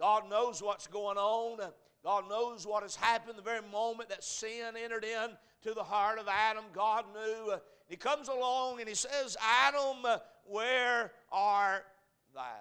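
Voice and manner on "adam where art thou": put-on slow, sorrowful, aching, pained cry. Speaker retells God calling to Adam in the garden, acting out pain. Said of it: "I can hear the pain".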